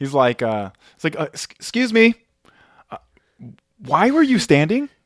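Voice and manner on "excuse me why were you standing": mock passive-aggressive, very high, slow, deliberate. Retelling what a man said to them in the back rows, mock passive-aggressive. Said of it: "in the most passive aggressive tone".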